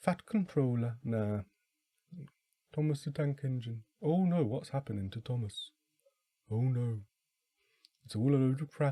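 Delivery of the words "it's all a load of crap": clumsy, botched put-on Liverpool accent. Speaker retrying a quote after admitting they can't do the accent, failed Liverpudlian accent. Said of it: "I can't do a Liverpudlian accent".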